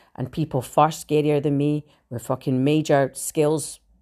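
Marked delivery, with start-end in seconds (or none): none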